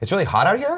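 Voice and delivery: rising tune on "here". Describing people who end statements like questions: rising question intonation on here. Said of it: "it's when people put question marks at the end of everything".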